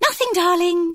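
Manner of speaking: very high, loud trill. Reading a novel, the narrator gives a woman's reply, trilling. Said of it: "she trilled".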